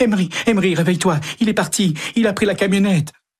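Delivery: very high, rushed, panting, breathless, stumbling stammer. Running into the house, she shakes her husband Emery awake: stammering, breathless. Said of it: "le secoue et balbutie, haletante".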